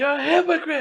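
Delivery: put-on, high-pitched yell. Retelling confronting the governor as people moved in, retelling a yell. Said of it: "I'm yelling".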